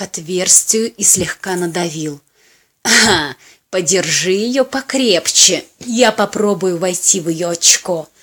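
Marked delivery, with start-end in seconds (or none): none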